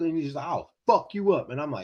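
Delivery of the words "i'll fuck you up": acted, menacing, threatening voice. Retelling how a big guy threatened him, imitating a menacing threat. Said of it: "this guy is just ready to beat my ass".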